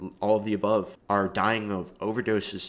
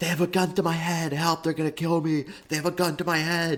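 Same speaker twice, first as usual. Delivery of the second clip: mock full-on, high-pitched screaming cries; 8 semitones higher than usual. Retelling a video where FouseyTube screams for help: imitating FouseyTube screaming. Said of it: "he's literally screaming".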